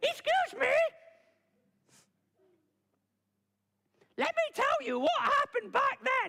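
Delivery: squeaky, very high puppet rat voice. Describing Horrible Histories, the speaker does the puppet rat's line: Rat puppet voice. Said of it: "the rat kind of goes".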